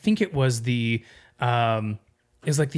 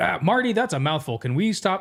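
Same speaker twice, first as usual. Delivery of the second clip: higher, offhand voiceover narrator voice; 6 semitones higher than usual. Retelling what a narrator said between recording takes: imitating a narrator between takes. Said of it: "but then he'd be like".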